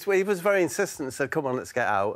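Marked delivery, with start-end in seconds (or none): none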